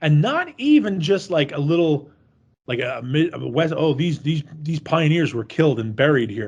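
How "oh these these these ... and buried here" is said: plain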